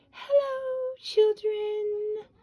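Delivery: sugary, sweet, very high voice. Narrator reads a teacher greeting her class on her return, in a sweet voice. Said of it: "said in a sweet voice".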